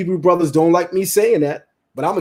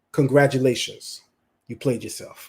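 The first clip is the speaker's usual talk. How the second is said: breathy, half-whispered put-on celebrity voice; 6 semitones lower, 5 dB quieter than usual. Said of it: "In my [name] voice".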